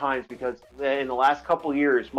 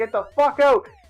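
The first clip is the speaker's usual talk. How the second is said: put-on extremely high-pitched scream; 9 semitones higher, 4 dB louder than usual. Retelling how a friend screamed at a truck driver: imitating a scream. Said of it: "screamed at the guy".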